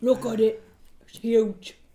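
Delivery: put-on gravelly politician voice. Joking about a huge wallaby with friends: really husky Trump voice. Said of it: "a really husky Trump".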